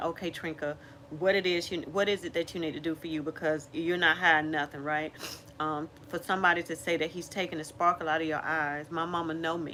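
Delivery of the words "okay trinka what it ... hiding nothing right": normal talking voice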